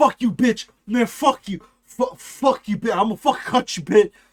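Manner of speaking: hostile, aggressive, stammering stream of cursing insults. A streamer imitating a guy who keeps cursing at him: imitating a guy's trash talk. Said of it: "This is him, by the way".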